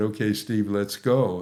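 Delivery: plain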